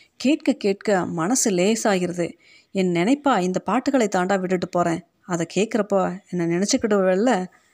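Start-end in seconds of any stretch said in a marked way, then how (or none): none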